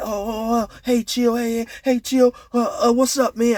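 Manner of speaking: high-pitched, spooked, scared stuttering voice. Retelling how a spooked man answered: imitating someone stuttering and stammering. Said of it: "this dude is stuttering and stammering".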